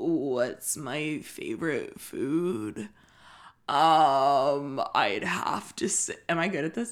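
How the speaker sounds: obviously put-on, trying-hard deep voice, drawn out. Mocking a guy who is clearly faking it, with the voice pitched lower. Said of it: "clearly pitching his voice lower".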